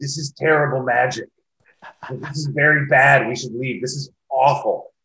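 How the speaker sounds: put-on unguarded blurting running commentary. Recounting sitting with the company vice president, imitating Alex talking too loudly. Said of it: "she kept way too loudly going".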